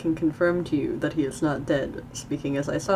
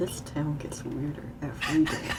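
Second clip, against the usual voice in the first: muttered under breath, quieter; 5 dB quieter than usual. Voicing a character's remark while narrating the scene, muttered under breath. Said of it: "like under his breath".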